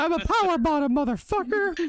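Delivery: very high, squeaky cartoon mouse voice. Laughing mid-bit, the speaker overshoots: Jim Cornette impression, Mickey Mouse-like. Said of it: "Cornette turned into Mickey Mouse / Elmo".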